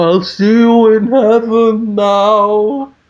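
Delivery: high ghostly voice. Narrating the story's ending as the leaves fly into the sky, in Matt Borealis's ghostly voice. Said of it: "you just hear Matt Borealis's ghostly voice just say".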